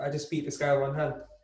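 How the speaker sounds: ordinary talk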